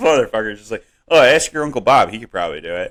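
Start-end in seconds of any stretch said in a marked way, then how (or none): 1.1-2.9 offhand, casual, unbothered, nonchalant tone. Retelling a father's reply about building from blueprints: imitating dad's nonchalant tone. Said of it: "so nonchalant".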